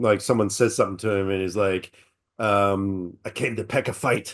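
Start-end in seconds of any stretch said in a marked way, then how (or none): 3.2-4.4 put-on Scottish accent, quieter. Retelling a line from a movie trailer: Mel Gibson Scottish accent. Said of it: "Mel Gibson in his Scottish accent".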